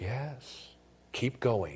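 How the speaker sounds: soft, hushed, encouraging stage whisper murmur. Speaker voices what Satan half-whispers to someone regretting what they did, Satan half-whispering. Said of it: "Satan just keeps whispering".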